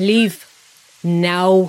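grunting. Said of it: "he grunted".

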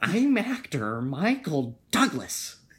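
very slow, deliberate, loud, high-pitched, drawn out. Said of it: "You kinda sound like the Joker".

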